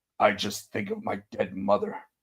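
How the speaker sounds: dry, dead-straight, low delivery. Retelling an interview answer about keeping a straight face: imitating Liam Neeson's deadpan. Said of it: "And that's how he says it".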